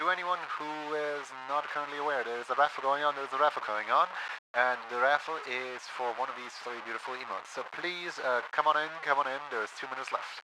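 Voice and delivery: put-on announcer voice, calling out. A streamer announces a raffle to viewers, in an announcer voice. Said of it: "let's do the announcer voice".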